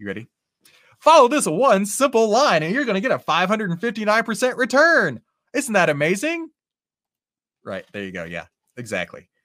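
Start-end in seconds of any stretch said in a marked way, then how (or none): 1.0-7.8 hyped, loud, pitched-up, hard-selling advertisement voice. Doing his best impression of a YouTube ad: YouTube ad impression. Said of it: "I'm going to do my best impression of a YouTube ad".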